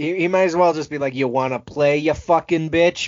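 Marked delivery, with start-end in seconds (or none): 1.1-3.1 sinister, menacing, evil, threatening tone. Joking about what the doll really means: menacing Chucky voice. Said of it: "that's the tone that he's taking".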